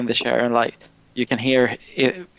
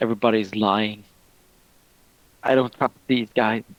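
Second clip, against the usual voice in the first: mumbling through tears. Game master voicing a crying character in the darkness, crying mumble. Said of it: "He's crying, start to cry a lot, and he just mumbles".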